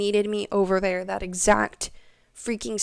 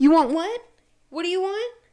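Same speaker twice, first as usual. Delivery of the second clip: mock impatient, fed-up, irritated, high-pitched snap; 9 semitones higher than usual. Retelling serving someone ordering who won't lift her head, acting out her own irritated snap. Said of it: "You are literally making me so irritated".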